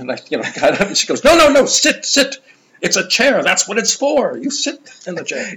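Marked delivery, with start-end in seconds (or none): 1.2-5.6 put-on German accent, much higher, slower. Recalling what a woman said after the speaker stood up from a chair, imitating her German accent. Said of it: "In her nice German way".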